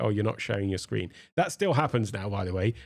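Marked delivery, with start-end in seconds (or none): none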